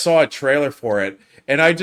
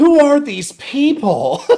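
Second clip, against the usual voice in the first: very high, girliest put-on voice, drawn out; 13 semitones higher, 5 dB louder than usual. Retelling his terrible acting of a line, girliest voice. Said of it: "He just goes in the girliest voice too".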